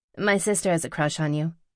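plain reading voice

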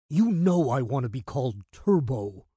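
sharp hissing. As Gary introduces him, Frank hisses at him. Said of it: "Frank hissed".

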